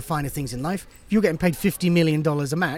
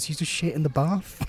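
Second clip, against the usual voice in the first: lowered, quiet voice, slower; 3 dB quieter than usual. Telling an aside about a wrestler with people eating nearby, lowered voice. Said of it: "I'm going to lower my voice".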